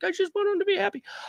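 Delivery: mock weepy, tearful voice near tears. Retelling what a mother on a dating show says: imitating Mahmoud's mom crying. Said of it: "always crying".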